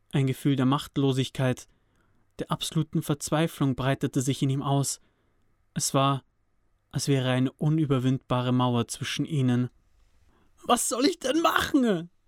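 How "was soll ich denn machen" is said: very high-pitched, breaking outcry with composure gone. Narrator reads Cody answering his brother Sam, crying out, losing control. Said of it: "schrie Cody hervor und konnte nun auch nicht mehr an sich halten".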